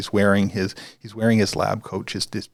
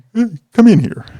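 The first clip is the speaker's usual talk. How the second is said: very loud, high-pitched calling out; 12 semitones higher, 10 dB louder than usual. Retelling how a supervisor called out from his office: imitating the supervisor's voice. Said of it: "that's how his voice sounds in my head".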